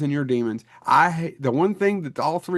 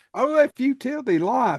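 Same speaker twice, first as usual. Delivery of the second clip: put-on Kentucky-style accent, higher pitch; 10 semitones higher than usual. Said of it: "I could do it".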